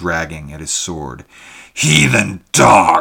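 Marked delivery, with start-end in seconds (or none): 1.7-3.0 furious, very loud, rough bellowing roar. A fighter knocked back against a table draws his sword; bellowing. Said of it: "he bellowed".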